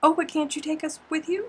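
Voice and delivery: very high, small, sugary, sweet little voice. Retelling a patron's request to join in the shower: imitating Ida's sweet little voice. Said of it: "In her sweet little Ida voice".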